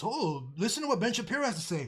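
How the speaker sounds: ordinary delivery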